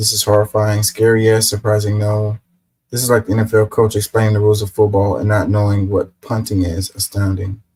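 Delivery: normal talking voice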